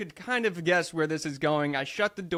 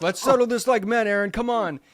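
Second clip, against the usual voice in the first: loud, high-pitched angry scream; 6 semitones higher, 7 dB louder than usual. Retelling how a man came back screaming at him, wanting to fight: imitating angry screaming. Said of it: "screaming at me, like again angry".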